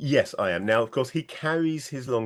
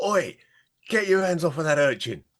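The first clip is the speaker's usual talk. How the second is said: quite loud, pitched-up calling voice; 6 semitones higher than usual. Speaking as a character drawing his weapon: said quite loudly. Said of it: "he is indeed going to say quite loudly".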